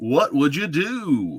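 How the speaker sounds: big, drawn-out radio announcer voice. Introducing the second edition of their game show, in a best radio voice. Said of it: "I'm going to put on my best radio voice here".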